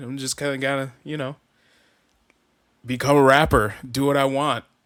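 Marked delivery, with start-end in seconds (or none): none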